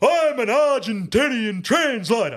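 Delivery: shrill, very high, drawn-out, top-of-the-lungs yell. Retelling what a man yelled in front of four thousand people: at the top of his voice. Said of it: "at the top of his voice".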